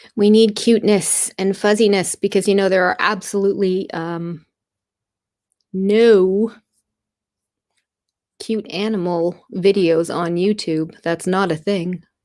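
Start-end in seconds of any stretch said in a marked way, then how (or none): 2.7-12.0 heavily ironic, sarcastic tone, "no" drawn out. Explaining why cuteness is needed while sharing a link: sarcastic. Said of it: "she says sarcastically".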